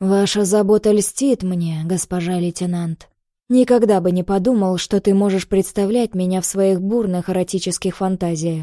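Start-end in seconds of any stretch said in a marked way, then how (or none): none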